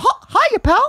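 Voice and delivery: high cartoon mouse impression. Trying out cartoon voices for the other speaker, doing a Mickey Mouse impression. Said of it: "My Mickey's the best one".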